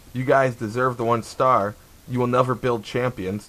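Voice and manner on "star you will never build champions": normal talking voice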